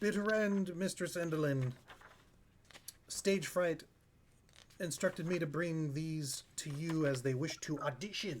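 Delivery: goblin creature voice. Voicing a goblin guide who presents the visitors to a mistress: goblin guide voice. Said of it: "your goblin guide says".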